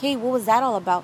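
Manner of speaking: normal talking voice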